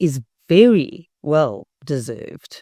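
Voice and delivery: very stretched out, slow and heavily stressed. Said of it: "I do want to emphasize the word very".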